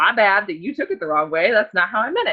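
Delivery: ordinary delivery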